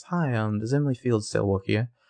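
put-on refined, posh Australian accent, Melbourne style. Quoting what she said when she came in, in a posh Melbourne accent. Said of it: "She's got like it's like a Melbourne accent".

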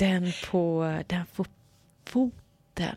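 whispering. A man tells a woman which tattoo he means, whispered. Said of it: "viskade han".

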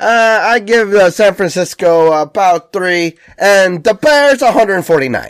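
high, slow, dumb, clueless voice. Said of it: "just nonsense like that".

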